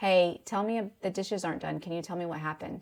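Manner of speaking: calm, gentle, kind, even-tempered delivery. Showing how to start a difficult conversation: calm, gentle tone. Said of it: "did you notice my tone?".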